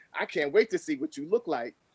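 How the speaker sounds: normal talking voice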